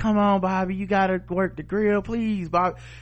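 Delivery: high, begging, pleading voice. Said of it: "like, begging them".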